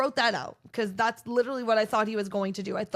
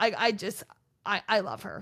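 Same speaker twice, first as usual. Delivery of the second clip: plain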